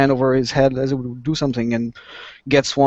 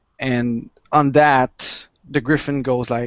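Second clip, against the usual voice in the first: ordinary delivery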